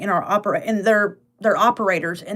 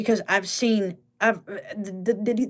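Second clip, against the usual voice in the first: soft, stumbling stutter on the opening words; 5 dB quieter than usual. Speaker trying to explain a news headline, stuttering. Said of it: "I'm stuttering".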